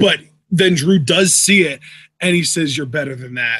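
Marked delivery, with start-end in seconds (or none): 2.7-3.6 mock-muttering under the breath, much lower and quieter. Recounting the NXT champion's reaction, retelling a mutter under the breath. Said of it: "like under his breath".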